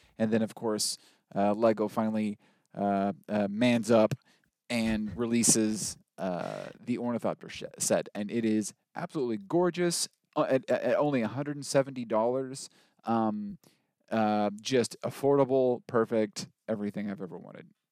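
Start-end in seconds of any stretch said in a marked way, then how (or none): none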